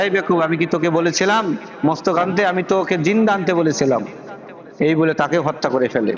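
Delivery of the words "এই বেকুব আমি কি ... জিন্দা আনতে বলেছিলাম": ordinary delivery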